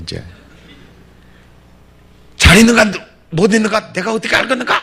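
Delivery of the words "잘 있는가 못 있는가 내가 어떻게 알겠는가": mock shrill, very high, very loud, irritated angry snap. Retelling Mom's reply when a friend asked after her daughter: imitating an angry, irritated retort. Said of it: "우리 어미가 열받아 버린 거예요".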